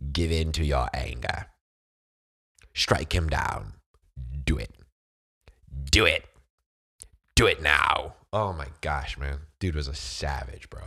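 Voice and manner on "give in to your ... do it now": loud, evil, goading tone. A speaker showing off voice acting quotes a favourite movie line: the Emperor impression. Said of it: "I loved the Emperor, man. He'd be like".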